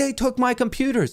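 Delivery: put-on very high, panicked, frantic cry. Retelling what the robbed girlfriend shouted: imitating a frantic woman. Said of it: "She's still freaking frantic".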